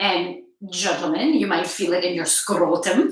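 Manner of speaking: slight touch of Irish brogue. Speaker addressing the gentlemen listening, in a slight Irish accent. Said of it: "say that in a bit of an Irish".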